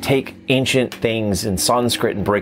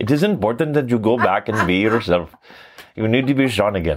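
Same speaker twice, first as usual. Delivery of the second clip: heavy, thick, laid-on put-on Indian accent. Retelling what a woman told him, quoting her in a thick Indian accent. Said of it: "she said it in a very thick Indian accent".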